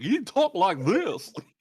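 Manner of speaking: very high, loud, slow voice with speech impediment. Player telling of a travel companion, Yermagan, imitating his really bad speech impediment. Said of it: "he had this really bad speech impediment".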